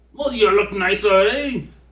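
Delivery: put-on high old man voice. Voicing an old man whom the players are led over to: old man voice. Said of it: "As they lead you over to the old man".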